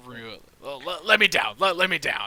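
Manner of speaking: growled, fed-up, very loud. In a tabletop game, a fed-up character tells another character to let him down, growling. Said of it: "he just growls to Rue".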